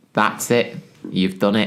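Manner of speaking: plain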